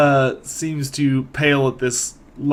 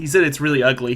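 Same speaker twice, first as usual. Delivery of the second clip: usual speaking voice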